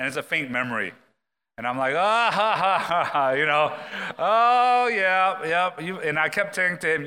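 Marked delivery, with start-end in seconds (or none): 2.0-5.8 very slow, drawn-out put-on chuckling. Speaker recalls Peter talking about putting Chloe to sleep, retelling his own chuckling. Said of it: "I was just chuckling at him".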